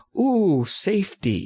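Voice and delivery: mock delighted coo, slow and high.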